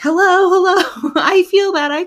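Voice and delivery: put-on yelling. Retelling being cut open, the speaker re-enacts calling out to the room: retelling own yelling. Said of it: "I'm like yelling".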